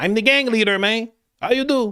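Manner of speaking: very high put-on Mexican accent. Playing a gang leader in Brazil, the speaker puts on a Mexican accent. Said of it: "Guy in Brazil has a Mexican accent".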